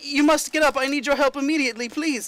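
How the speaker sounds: frantic urgent voice. Voicing the maid knocking on doors at dawn: frantic pleading. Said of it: "it's actually really frantic".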